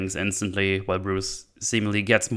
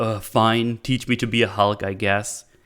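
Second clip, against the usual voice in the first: mock, very sarcastic imitated voice. Retelling how a character asks to be trained: imitating someone very sarcastic. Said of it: "very, very sarcastic".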